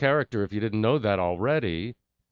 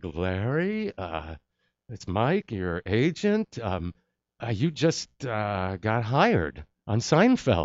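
mock-stunned, seen-a-ghost voice. Retelling a payphone call from the agent, imitating Mike's seen-a-ghost voice. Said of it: "his I've just seen a ghost voice".

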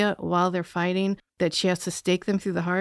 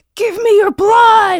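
very loud, very high-pitched shrieking scream; 13 semitones higher, 11 dB louder than usual. Retelling the lady vampire's line to Jonathan: imitating a scream. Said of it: "she just screams at him".

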